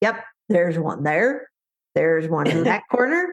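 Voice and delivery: put-on dog voice. Voicing an experienced dog scanning a room: Dash the dog's voice. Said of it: "that's Dash".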